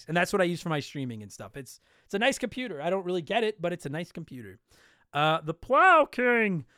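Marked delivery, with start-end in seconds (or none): 5.1-6.6 cartoonish put-on voice. Reading out a listener's name, The Plow King: Barney voice on the name. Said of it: "I have to say that name in the Barney voice".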